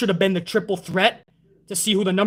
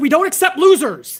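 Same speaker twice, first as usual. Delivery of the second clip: high, loud screaming yell; 7 semitones higher, 6 dB louder than usual. Ranting about a storyline, the speaker quotes Ali: imitating Ali screaming. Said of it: "He's screaming at it".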